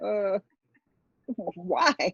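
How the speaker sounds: put-on baffled, puzzled little "why". Imitating a partner's reply to a movie suggestion: puzzled partner's reply. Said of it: "He gonna be like".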